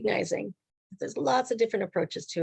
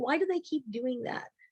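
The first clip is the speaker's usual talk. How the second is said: put-on crying child voice; 6 dB quieter than usual. Retelling a daughter's question about teachers: imitating a crying child.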